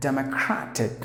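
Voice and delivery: cra in democratic stressed, said loudest. Pronunciation lesson on democratic: stress cra in democratic. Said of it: "Crash should be given more volume".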